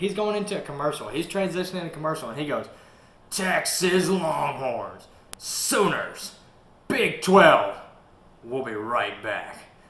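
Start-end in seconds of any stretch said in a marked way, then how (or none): 3.3-9.6 very slow, drawn-out, over-the-top announcer call. Imitating an announcer going into a commercial: imitating Gus Johnson over the top. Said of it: "he's just so over the top".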